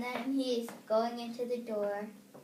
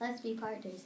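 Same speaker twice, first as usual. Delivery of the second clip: ordinary talk, nothing marked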